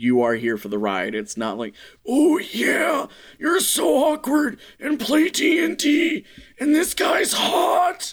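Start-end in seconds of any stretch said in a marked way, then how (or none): 2.1-8.1 put-on smutty old man voice, very high, swooping. Acting out a mock line, in a shitty erotica grandpa voice. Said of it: "are you like shitty erotica grandpa right now? Is that what this voice is?".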